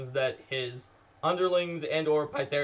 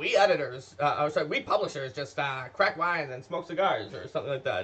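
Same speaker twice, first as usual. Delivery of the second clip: mock old-fashioned newsman voice. Imagining how Eric would joke about it, in Eric's old-timey reporter voice. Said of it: "He sometimes does that voice".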